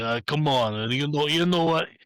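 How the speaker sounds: loud New York movie tough-guy voice. Imitating a villain's voice: new york italian tough guy voice. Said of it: "those New York Italian tough guys you see in, like, a movie".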